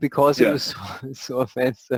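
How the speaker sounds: talking through laughter. Explaining why a band made an offensive T-shirt, laughing while talking. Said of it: "Sorry, I'm laughing".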